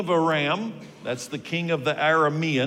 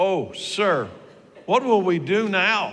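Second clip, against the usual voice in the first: alarmed, desperate, panicked pleading cry; 3 semitones higher, 3 dB louder than usual. Speaker retelling a surrounded young man crying out; acting out a panicked cry. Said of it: "Do you hear the panic in his voice?".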